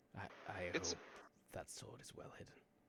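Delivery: hushed, in-character whisper. Voicing a character who leans in to a player character: whispering in character. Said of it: "he's whispering it specifically to Archie".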